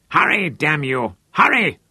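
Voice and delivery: furious, angry snarl. Lothar, back on deck, urging the other trawlers on, snarling. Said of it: "Lothar snarled ineffectually at them".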